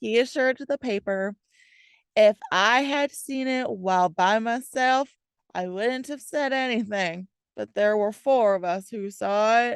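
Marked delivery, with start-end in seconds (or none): 2.2-9.8 bad put-on Southern accent, slipping and recovering. Quoting what a man assured a local newspaper: bad fake Southern accent. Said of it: "What was that accent trying to be?".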